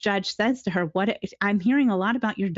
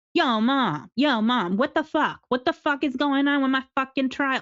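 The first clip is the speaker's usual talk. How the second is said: crude, foul-mouthed swearing rant; 5 semitones higher than usual. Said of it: "that's how she's talking on the phone".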